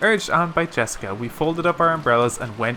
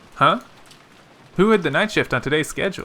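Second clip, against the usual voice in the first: plain reading voice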